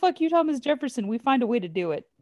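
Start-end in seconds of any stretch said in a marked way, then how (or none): 0.0-1.1 high, loud yell. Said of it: "get a chance to yell".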